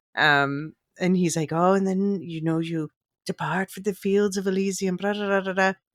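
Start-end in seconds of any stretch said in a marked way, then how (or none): 1.5-5.7 put-on Irish brogue accent. Retelling a funny movie line from an actor: imitating an Irish accent. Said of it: "I guess he's doing an Irish accent".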